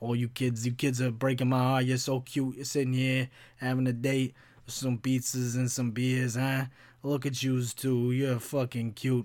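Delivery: put-on New Jersey accent. Retelling a woman who kept interrupting a date, imitating a Jersey accent. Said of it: "like Jersey, like East Coast accent".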